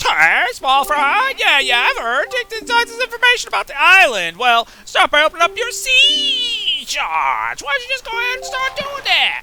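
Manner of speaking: squeaky, high, swooping, sing-song cartoon fish voice. Reading out a fish's game dialogue in a put-on fish voice. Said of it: "that's what they sound like".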